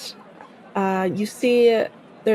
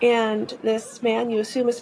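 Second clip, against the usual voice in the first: plain reading voice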